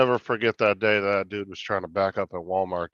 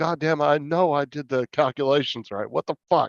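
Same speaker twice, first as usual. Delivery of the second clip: mock angry, pissed-off yell, high pitch; 6 semitones higher than usual. Retelling how Matt yelled at himself on the phone: imitating Matt yelling. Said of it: "He was yelling at himself on the phone".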